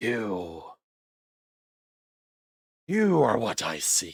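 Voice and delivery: swooping, undead zombie voice like a corpse. A voice speaks out of a body whose jaw falls off, voice from a corpse's head. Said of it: "a voice starts coming out of his head".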